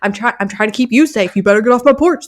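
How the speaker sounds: put-on straining, as if struggling hard. Retelling a pretend routine at the door, holding back a friendly dog: imitating own act of straining to hold a dog back. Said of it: "trying to act like I've got my hands full".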